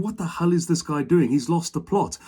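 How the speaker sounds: plain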